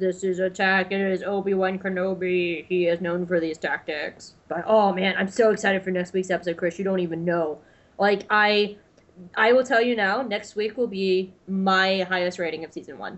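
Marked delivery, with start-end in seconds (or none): 0.0-4.3 level, toneless, flat droid monotone. Discussing an episode, a co-host imitates a character's line: monotone character voice.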